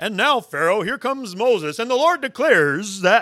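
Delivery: dignified, very loud, booming radio announcer voice. Play Aaron, a very good public speaker, addressing Pharaoh in Aaron's dignified radio voice. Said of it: "that one that sounds like this".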